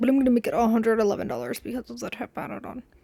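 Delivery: muttered, indistinct mumble, words run together. Quoting a man adding a tip to the bill, mumbled. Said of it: "he like mumbles this. ... that's literally how he said it".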